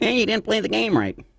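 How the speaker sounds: very high, put-on, scolding voice. Imagining a call saying the game wasn't played right: John Perry's voice. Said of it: "That'd be John Perry's voice".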